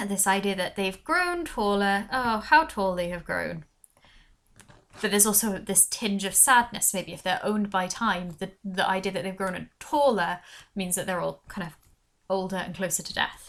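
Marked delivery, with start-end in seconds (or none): 2.1-3.6 read in a sarcastic, mocking tone. Explaining a poem and showing how a line reads as sarcastic. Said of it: "if you read this as sarcastic".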